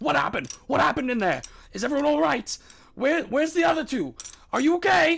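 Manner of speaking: high, loud shouting from a crowd. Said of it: "bombarded by shouts and questions".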